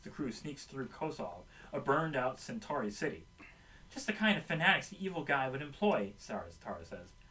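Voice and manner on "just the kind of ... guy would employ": usual speaking voice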